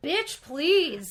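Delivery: dismissive sass. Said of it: "you're like".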